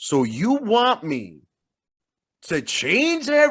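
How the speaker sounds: heavy mocking sarcasm, very slow sing-song drawl. Retelling how one character answered another: imitating a sarcastic tone. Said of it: "he came at him mad sarcastically".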